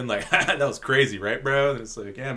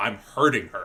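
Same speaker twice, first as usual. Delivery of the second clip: put-on begging voice, lower pitch; 3 semitones lower than usual. Retelling a movie scene, begging Kaneda to stop him: imitating Tetsuo begging. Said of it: "he is begging Kaneda".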